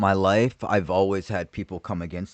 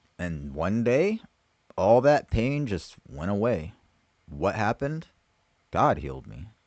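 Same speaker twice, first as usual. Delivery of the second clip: normal talking voice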